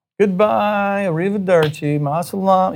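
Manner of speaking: high, taunting, jeering, mocking tone. Speaker retells soldiers mockingly saying goodbye to the group: imitating mocking soldiers. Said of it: "they kind of are mockingly saying to us".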